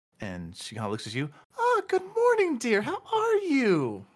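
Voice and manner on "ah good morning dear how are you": very high, sunny, cheery, raised voice. Voicing a cheery halfling baker greeting a customer: cheery halfling baker voice. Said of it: "just cheery smiled female".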